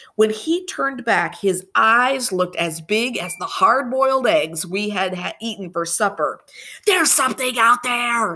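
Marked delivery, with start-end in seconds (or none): 6.9-8.4 high, urgent, secretive hiss. Narrator reads Andrew's line after he peeks through the window: hissed. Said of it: "he hissed".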